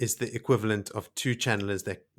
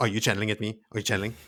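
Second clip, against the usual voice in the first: put-on suspicious voice. Acting out Mat questioning the Aes Sedai: suspicious Mat voice. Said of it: "he's super suspicious of the Aes Sedai".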